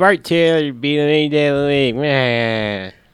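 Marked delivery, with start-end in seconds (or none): 0.0-1.9 put-on kid impression, higher. Retelling a movie scene, voicing a kid: imitating a kid from the movie. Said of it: "You're capturing these kids like you wouldn't believe".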